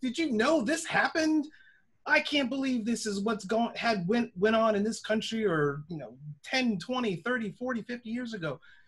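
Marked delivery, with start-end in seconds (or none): 0.0-5.5 full-on high, screaming rant. Recalling coming home and telling dad what school never taught: retelling a scream. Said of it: "coming home and screaming like".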